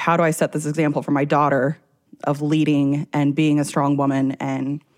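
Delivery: ordinary delivery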